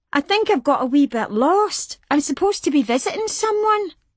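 put-on innocent, high little girl voice. Martha asks strangers for directions, putting on her little girl voice. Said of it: "Martha put on her little girl voice".

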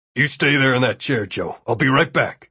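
ordinary delivery

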